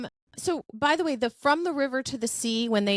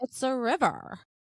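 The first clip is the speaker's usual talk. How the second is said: put-on girl's way of talking, copied closely; 3 dB quieter than usual. Retelling a girl's answer to a question: imitating the girl's voice. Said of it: "I have to do this voice because that's how she talks".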